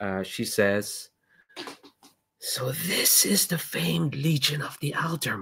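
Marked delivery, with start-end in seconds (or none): 2.4-5.4 high, scratchy woman's voice calling out. Speaker voicing a woman calling out to everyone, in a high, scratchy voice. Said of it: "this like high sort of scratchy voice".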